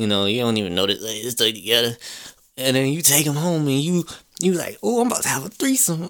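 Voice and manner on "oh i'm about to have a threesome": high, giddy, tipsy and thrilled anticipation. Acting out a drunk person taking two girls home: acting out drunk excitement. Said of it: "You all excited".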